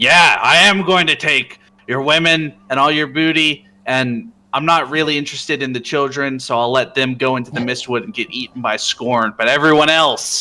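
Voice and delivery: high, loud, in-character shout. A character shouts back at people who fear the Vornari will take their stuff: in-character shout. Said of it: "and I shout out".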